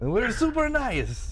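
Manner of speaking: very high, over-the-top put-on Canadian accent. Listing canadian traits with another speaker, in the worst canadian accent ever. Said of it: "What the hell kind of accent are you doing?".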